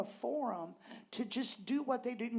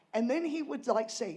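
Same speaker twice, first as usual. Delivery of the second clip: usual speaking voice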